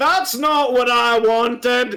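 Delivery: bellowed at full volume, very loud shout. Retelling what he said loudly from behind a curtain, retelling a very loud shout. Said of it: "you hear him say very loudly".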